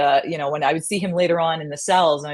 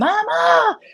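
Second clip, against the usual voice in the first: put-on scream, higher and louder; 4 dB louder than usual. Retelling an arrest where the person screams for mama: imitating someone screaming. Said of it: "they're screaming".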